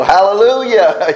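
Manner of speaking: high, loud, joyful shout. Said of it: "stand up and go".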